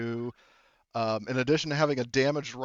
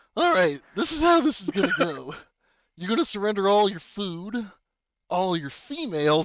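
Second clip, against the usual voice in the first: creepy, unsettling, higher-pitched voice; 7 semitones higher, 4 dB louder than usual. Voicing a man in a scene, in a creepy tone. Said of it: "He says in a creepy".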